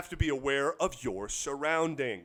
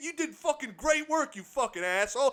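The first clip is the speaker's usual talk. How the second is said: put-on aggressive, passionate New York yelling, higher; 9 semitones higher than usual. Acting out a New Yorker praising someone: mock aggressive New York yelling. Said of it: "sounding like you are, are yelling when you're just passionate".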